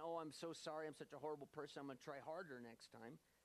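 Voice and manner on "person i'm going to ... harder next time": ordinary talk, nothing marked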